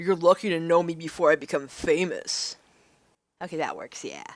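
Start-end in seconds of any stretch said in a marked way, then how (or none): 0.0-2.6 put-on loud douchey jock swagger. Speaker tries out a new voice for their character: douchey jock voice. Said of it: "I'm trying to do a douchey jock voice".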